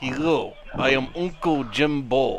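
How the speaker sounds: cheery put-on Russian character voice. Introducing a character called Uncle, in a happy Russian voice. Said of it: "in a happy Russian voice".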